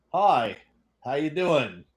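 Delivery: offhand, generic, casual delivery. Showing how Jose actually said hello: imitating Jose. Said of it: "this was him".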